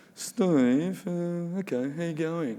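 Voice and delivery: solemn, heavy, grave delivery. Retelling a Zoom call to pitch a TV show, imitating the man's greeting: imitating his put-on Bad News Voice. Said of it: "he put on the Bad News Voice".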